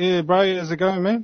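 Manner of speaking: New Zealand accent from Auckland. Comparing New Zealand regional accents, now doing the Auckland one: Auckland accent. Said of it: "Then there's the Auckland accent".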